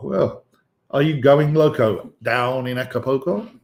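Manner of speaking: terrible, hammy, cheesy radio DJ voice. Playing on the word Acapulco while introducing a product: terrible DJ voice. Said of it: "I sound like a terrible D J now".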